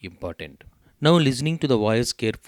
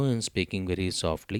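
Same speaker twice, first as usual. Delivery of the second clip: normal talking voice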